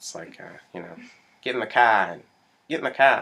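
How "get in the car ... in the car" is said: put-on Boston accent. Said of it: "Is that your Boston?".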